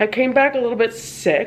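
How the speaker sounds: a little bit stressed and stretched out.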